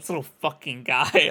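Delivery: put-on angry voice. Redoing their rendition of a little guy's line, imitating a pissed-off guy. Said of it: "he's so pissed".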